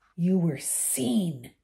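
hissed, hissing voice. Reading a character confronting others with a newspaper headline, hissed. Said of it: "he hissed".

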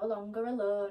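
ordinary delivery, nothing marked

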